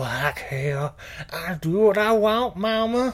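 high, slow, hammy, over-the-top bad Southern accent. Retelling Lula's line from a movie in a bad Southern accent. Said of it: "a lot of bad Southern accents in here".

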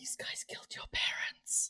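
slow, unvoiced whisper. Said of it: "I'm gonna whisper into the bottle".

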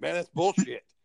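mock irritated, fed-up, pissed-off tone, pitched high. Retelling what Aaron said when he was angry: imitating Aaron pissed off. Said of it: "he was pissed off".

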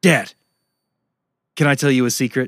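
fast, dead-serious, all-business, no-nonsense delivery. Retelling how a young son ran up to his dad: imitating son's super-serious tone. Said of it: "He runs up to me super serious".

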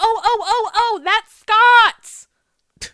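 mock shrill, very slow, loud, panicked, drawn-out squeal. Retelling how an off-camera voice reacted: imitating Michelle freaking out. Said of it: "freaking out, going".

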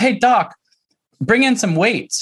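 acted, high, called-out yell. Acting out how she called out to a Thai doctor, retelling a yell to a doctor. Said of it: "She yells out to this Thai doctor".

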